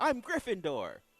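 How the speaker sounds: high, joyful, delighted voice. Imitating a fan saying his house: mock joyful fan voice. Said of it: "You didn't have to do that voice".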